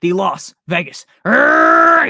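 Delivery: screamed very loud, stretched very slow. Saying a team name aloud when asked to: screaming. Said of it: "Sorry for screaming in your ear".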